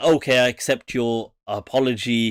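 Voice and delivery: ordinary talk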